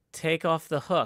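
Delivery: acted-out, put-on yelling. Retelling how Kelly yelled at Captain Hook: retelling a yell. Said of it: "Kelly yells".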